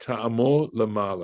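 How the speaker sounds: ordinary talk, nothing marked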